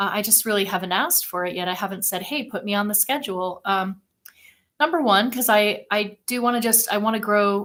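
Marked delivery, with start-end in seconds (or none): none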